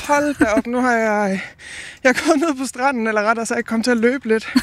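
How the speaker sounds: slightly winded, a little out of breath. Having just run a little on the beach, the speaker reports in, slightly out of breath. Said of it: "Derfor er jeg lidt forpustet".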